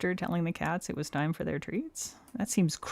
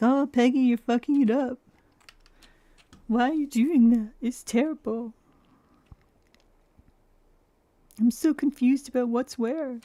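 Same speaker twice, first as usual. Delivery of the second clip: silly, dopey, high, loud, stupid-sounding put-on voice; 7 semitones higher, 6 dB louder than usual. Imitating viewers who doubted the painting: mocking imitation of viewers, stupid-sounding. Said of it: "You sound so stupid right now".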